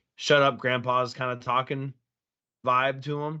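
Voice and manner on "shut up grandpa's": ordinary talk, nothing marked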